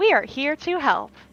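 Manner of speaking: commercial announcer, customer service tone. During a game with persuasion rolls, a player speaks in a customer service advertisement voice. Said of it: "like a customer service like advertisement voice".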